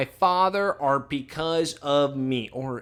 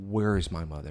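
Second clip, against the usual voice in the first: firm put-on voice, lower and quieter; 8 semitones lower, 5 dB quieter than usual. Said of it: "Why couldn't he be more firm?".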